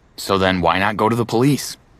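ordinary talk

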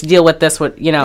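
normal talking voice

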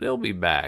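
said with a snort. A woman replies to Bobby, snorting. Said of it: "she snorted".

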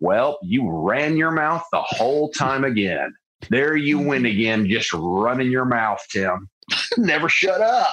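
cowboy voice with drawl. Retelling what he tells himself after recording the podcast, in a cowboy voice. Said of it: "You say it like a cowboy to yourself".

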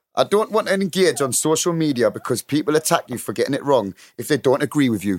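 Newcastle accent. Reading out a listener's question after being asked to do it in the accent: Newcastle accent. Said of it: "Please do it in the accent".

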